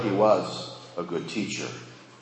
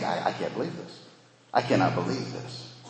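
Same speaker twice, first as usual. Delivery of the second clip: acted-out incredulous tone; 5 dB quieter than usual. Reading a letter aloud, voicing how its writer reacts, mock-incredulous. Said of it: "I can just hear the incredulity in Paul's voice".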